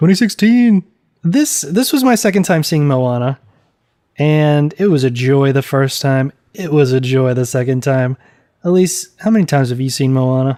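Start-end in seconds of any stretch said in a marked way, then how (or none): 0.0-0.8 proud, boastful new graduate bragging tone. Mimicking how the other speaker just said the year, imitating a proud 2016 graduate. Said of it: "like you graduated twenty sixteen".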